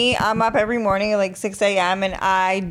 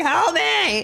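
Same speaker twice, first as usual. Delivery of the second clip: acted out, high, loud yell; 9 semitones higher than usual. Retelling falling on the ground while the dog fought: imitating own past yell. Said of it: "I'm yelling".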